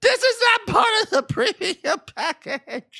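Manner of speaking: mock, very high clown yell. Telling a chaotic party story, imitating a clown yelling. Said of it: "he's yelling".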